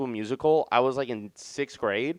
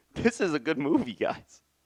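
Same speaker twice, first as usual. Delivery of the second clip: tearful crying with a little laugh through it; 3 semitones higher than usual. Telling listeners about a movie that moved them; crying, laughing a little. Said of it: "because I can't believe I'm crying".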